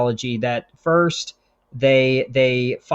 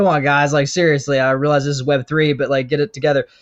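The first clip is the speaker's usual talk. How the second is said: ordinary talk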